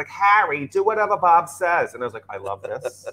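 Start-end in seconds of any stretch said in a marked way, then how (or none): 0.1-1.9 put-on heavy, thick, drawn-out New England accent. Imitating a mom calling the speaker by a nickname, in a thick new england accent. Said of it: "really thick New England accent".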